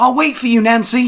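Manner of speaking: loud high call.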